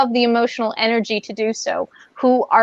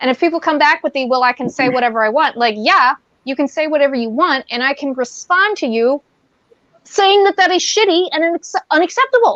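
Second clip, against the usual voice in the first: getting heated, worked up and fired up; 4 semitones higher than usual. Speaker talking with another person, getting worked up. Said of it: "I'm getting like worked up now".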